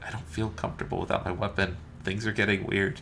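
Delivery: soft, hushed, confiding half-whisper. A character who let a player take his weapon speaks to them: whispering. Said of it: "He kind of whispers it to you".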